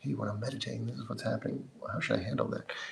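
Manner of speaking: very quiet, hushed whisper under the breath. Retelling how the tea pourer asked the Khenpo a question: imitating a whispered question. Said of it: "he would whisper a little question".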